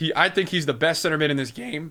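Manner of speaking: voice breaking and cracking mid-line. Talking to Twitch chat during a game, voice cracking. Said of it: "But nice voice crack".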